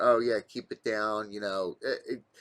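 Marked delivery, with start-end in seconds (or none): none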